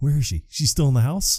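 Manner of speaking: excited, eager, all keyed-up voice. Recapping a favorite movie scene, the speaker acts out the man's line, mock-excited. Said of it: "he's all excited".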